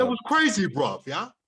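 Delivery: put-on London accent. Playing up the accent after being told he sounds London: put-on London accent. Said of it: "You sound almost London".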